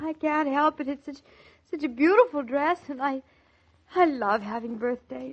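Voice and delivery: happy crying through tears, tearful. A wife, given a beautiful dress for her birthday, answers her husband; crying with happiness. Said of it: "and now you're crying".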